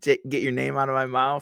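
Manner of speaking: ordinary talk, nothing marked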